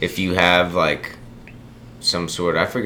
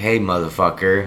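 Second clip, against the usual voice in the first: normal talking voice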